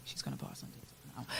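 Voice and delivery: snide, whispered mutter under the breath. Retelling what a girl said at break time: imitating someone muttering under her breath. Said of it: "she said it under her breath".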